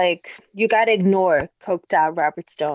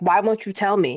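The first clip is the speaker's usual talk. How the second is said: plain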